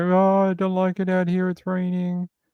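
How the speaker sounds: high, yowling, startled, complaining cat voice. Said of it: "she was screaming and she's like".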